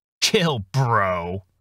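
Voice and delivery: sarcastic snide snarky tone. The narrator answers his nervous talking houseplant while opening a box, snarky. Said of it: "I snarked in reply".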